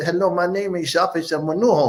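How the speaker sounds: put-on, fake Spanish-sounding accent.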